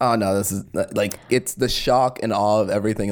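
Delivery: normal talking voice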